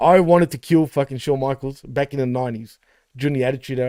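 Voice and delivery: ordinary talk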